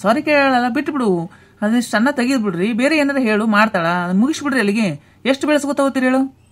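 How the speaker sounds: high-pitched, exasperated scolding.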